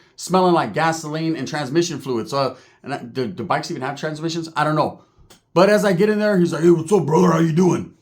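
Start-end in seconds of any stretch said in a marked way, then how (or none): 6.7-7.9 big, macho, wrestler-style showman voice. Retelling how a biker greeted him: Macho Man-ish voice. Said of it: "more Macho Man-ish".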